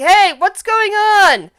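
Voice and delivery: very high, slow, drawn-out dragon cry. Voicing a dragon calling out to the others: dragon yelling. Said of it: "yell in Draconic going".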